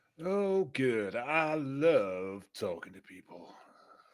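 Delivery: loud, very slow dry sarcasm, "love" drawn out. Answering news that the group must talk to people: sarcastic. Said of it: "I know sarcasm".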